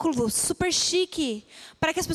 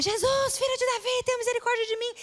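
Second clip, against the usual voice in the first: high, loud, crying-out shout; 8 semitones higher than usual. Retelling how the blind man began to shout to jesus: retelling a shout. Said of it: "E ele começou a gritar".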